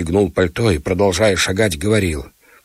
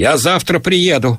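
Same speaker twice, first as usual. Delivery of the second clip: raised, loud, high-pitched shout; 8 semitones higher, 3 dB louder than usual. Tsvetkov calls back to Olga Ivanovna from the front hall, shouted. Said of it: "крикнул он из передней".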